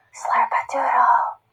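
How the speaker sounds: soft whisper. A speaker showing children their voice levels demonstrates the word, whispering. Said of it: "whisper slurpadoodle".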